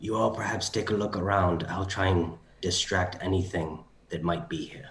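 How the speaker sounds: whispering in a character voice. Speaking in character to the party before a distraction: whispering in character. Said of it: "I will whisper to them".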